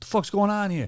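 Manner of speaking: put-on New Jersey mobster accent. Retelling a guy complaining loudly at an airport, Sopranos-style New Jersey mobster voice. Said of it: "He was straight out of The Sopranos".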